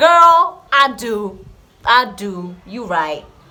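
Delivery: American accent, very loud. Answering a comment read aloud, in an American accent. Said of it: "Why am I speaking in an American accent today?".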